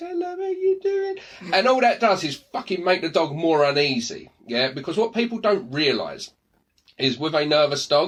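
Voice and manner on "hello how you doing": put-on very high, cooing baby talk voice. Mocking how people greet a nervous dog, disgusting baby voice. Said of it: "talk in this disgusting baby voice".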